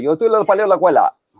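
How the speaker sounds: Cuban Spanish accent. Demonstrating Spanish dialects, saying the sentence as Cubans would: Cuban Spanish accent. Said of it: "they would say".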